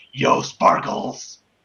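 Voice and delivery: brooding masked-vigilante character voice. Among friends, the speaker announces his Batman voice and calls to Sparkles: Batman voice. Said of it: "Now here comes my Batman voice".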